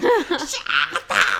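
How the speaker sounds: put-on woman's high, strained scream at top of lungs. Retelling a woman yelling at someone, retelling a top-of-lungs scream. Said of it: "like at the top of her lungs".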